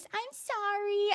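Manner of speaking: put-on tiny, very high babyish whimper, baby voice. Speaker recounting how Bryn apologizes after twisting people's words, Bryn's little baby voice. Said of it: "in her little baby voice".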